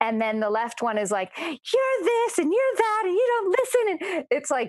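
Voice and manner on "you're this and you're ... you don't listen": very high, loud, obnoxious tantrum. Retelling what the left hand said to the speaker: imitating a loud, blaming tantrum. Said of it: "It's doing the temper tantrum".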